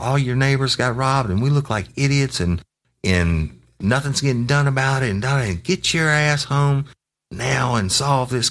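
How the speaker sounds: put-on very high, harsh, angry ranting. Speaker acts out how a woman scolded him, retelling a scolding. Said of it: "she starts just reaming my ass".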